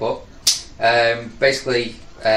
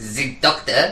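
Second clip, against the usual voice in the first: German-accented delivery; 2 semitones higher than usual. Told to say the line in a German accent, saying it that way. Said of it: "Say it in a German accent".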